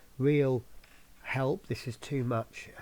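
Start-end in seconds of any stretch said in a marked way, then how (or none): none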